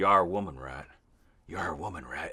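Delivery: put-on whispery voice. Quoting a line the actor said to Sarah: whispery Jonah Hex voice. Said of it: "he does this whispery, like, Jonah Hex voice".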